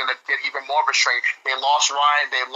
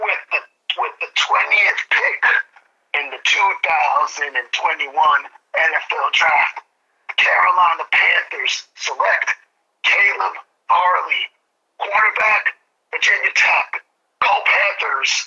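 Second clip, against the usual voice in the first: put-on wheezy, wheezing voice; 3 semitones higher, 3 dB louder than usual. Announcing the carolina panthers draft pick on air, wheezy asthmatic-sounding voice. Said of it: "you sound like you need some asthma help there".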